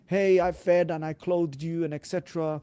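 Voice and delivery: ordinary talk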